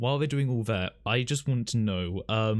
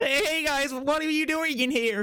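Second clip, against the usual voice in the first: whiny put-on voice, pitched much higher. Showing another performer how a line should sound: whiny Morty voice. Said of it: "do the whiny bitch voice".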